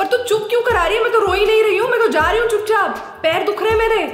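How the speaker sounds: indignant comic tone.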